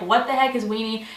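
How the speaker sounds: ordinary talk, nothing marked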